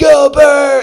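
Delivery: high, loud stadium-style cheer. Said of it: "all of a sudden you're just like".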